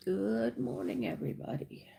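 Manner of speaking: half-awake voice. Greeting the audience right after waking up, not fully awake. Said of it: "I am not really fully awake yet".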